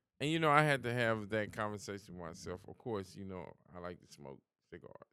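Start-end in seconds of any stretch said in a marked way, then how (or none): 3.8-5.0 much softer, hushed whisper. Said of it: "Why you whispering?".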